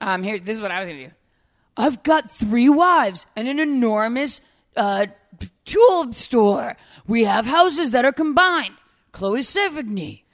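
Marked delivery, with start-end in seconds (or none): 1.8-10.1 booming, very slow, pitched-up belting voice. Doing a deep-cut impression when asked: Bill Paxton impression. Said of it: "That's my Bill Paxton".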